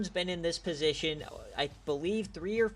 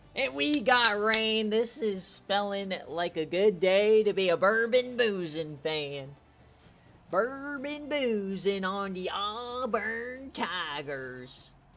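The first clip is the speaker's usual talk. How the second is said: slow put-on Southern accent, "Tigers" drawn out long; 3 semitones higher, 3 dB louder than usual. Previewing Auburn's rainy game day, the speaker slips into a put-on Southern accent. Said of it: "I just pissed off everybody with that accent".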